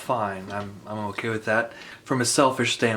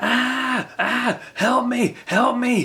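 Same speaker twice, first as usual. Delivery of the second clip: mock very high, very slow, drawn-out screaming; 14 semitones higher, 4 dB louder than usual. Speaker recounts hearing a lady in a parking lot, imitating her screaming. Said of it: "I just heard this screaming like".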